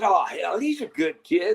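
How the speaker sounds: slow, drawn-out Texas drawl. Quoting the Colts' Ballard answering reporters about a young receiver, Ballard's Texas accent. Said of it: "in his Texas accent".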